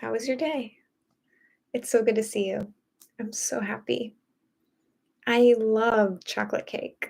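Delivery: put-on slow, unhurried, girly feminine voice. Showing how they would talk if they were on a date: slow, feminine date voice. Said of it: "I'd talk like this".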